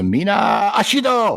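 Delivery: very high, chant-like battle-cry shout. Playing a character who yells the activation phrase: yelling. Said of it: "I'm going to yell the activation phrase".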